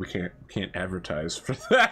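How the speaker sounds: mock mumble under the breath. Acting out a co-commentator objecting quietly: muttering under his breath. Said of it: "under his breath".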